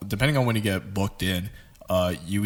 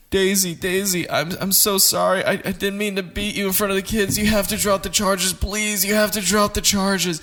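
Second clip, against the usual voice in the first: acted sobbing, tearful, voice pitched very high; 11 semitones higher than usual. Retelling listening to a guy on the phone, imitating someone crying. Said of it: "I had to listen to this guy cry".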